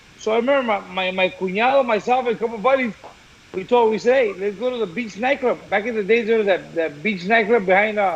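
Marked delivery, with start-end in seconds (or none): none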